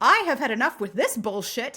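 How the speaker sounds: plain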